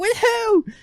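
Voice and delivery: very high-pitched, shrill screaming. Retelling a stepmom's questions at the door: imitating someone screaming. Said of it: "She's, like, screaming".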